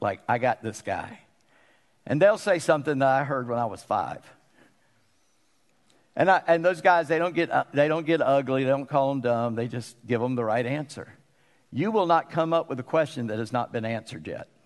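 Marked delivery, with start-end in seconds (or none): 0.3-1.2 low, smug, arrogant put-on voice. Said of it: "they will be so smug and arrogant".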